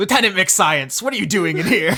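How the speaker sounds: curt, sharp snap. Voicing an officer who catches an intruder at a party: snapping at someone. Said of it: "snaps at you".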